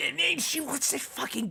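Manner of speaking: furious whisper. Voicing a character who leans in to Copernicus: angry whisper. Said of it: "angrily lean into Copernicus and whisper".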